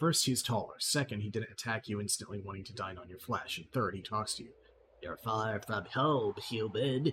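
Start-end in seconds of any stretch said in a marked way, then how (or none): 5.0-7.1 slow, drawn-out gremlin creature voice. Narrator voices an unusual gremlin talking to a human, high-pitched gremlin voice. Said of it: "he says in a high-pitched voice".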